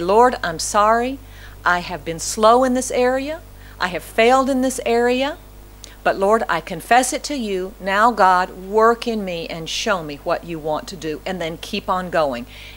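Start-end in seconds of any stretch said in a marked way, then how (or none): none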